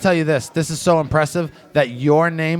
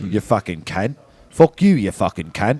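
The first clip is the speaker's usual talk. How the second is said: deep, very low put-on British accent; 7 semitones lower than usual. Bragging that he's great at accents, a speaker shows what British sounds like. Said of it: "British is like this".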